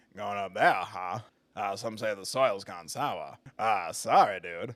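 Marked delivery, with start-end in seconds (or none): 0.2-3.4 put-on heavy southern accent, lower pitch and quieter. Trying out a voice meant to be the Pet Sematary neighbor, too southern. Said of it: "It sounds way too southern".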